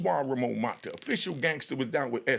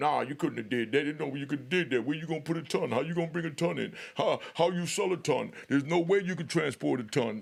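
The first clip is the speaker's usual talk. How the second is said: derisive, doubting, mocking troll voice; 2 semitones higher than usual. Picturing himself as a troll doubting his story: mocking imitation of a troll. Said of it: "picture me being a troll telling".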